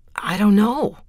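on the defensive. James answers the look Shea gives him, defensive. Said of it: "he said defensively".

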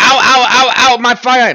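piercing, shrill, loud, high yelping scream. Narrating a thrown spear in a game, screaming as Peter. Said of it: "by screaming like that".

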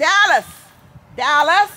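very high, shrill, very loud yell. Outside with mom about to cut branches, calling out to dallas: yelling a name. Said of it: "Please don't yell too loud".

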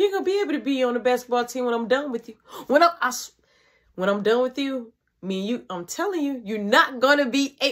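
ordinary talk, nothing marked

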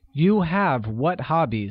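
plain

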